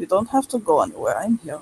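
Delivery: put-on speaking softly in a Russian accent. Describing a man the others hear speaking, voicing his line in a soft Russian accent. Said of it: "a soft voice, and with a Russian accent".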